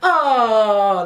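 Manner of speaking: put-on loud Italian-accented "oh", stretched long. Recounting how everyone reacted to an Italian nan, Italian accent on oh. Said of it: "like this, doing an Italian accent".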